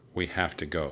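usual speaking voice

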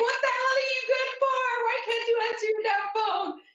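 acted-out angry cursing tirade, voice very high. Retelling phone messages left for her husband: retelling cursing someone out angrily. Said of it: "I'm here cursing him out".

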